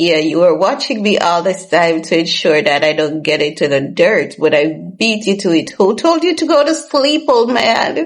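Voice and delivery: put-on playful ribbing, teasing through laughter. Retelling how she teased her father: laughing while teasing. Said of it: "I'll start laughing at him".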